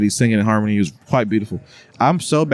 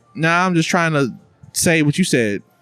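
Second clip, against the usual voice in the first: ordinary talk, nothing marked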